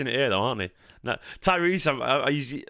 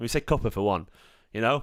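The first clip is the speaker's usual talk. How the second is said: plain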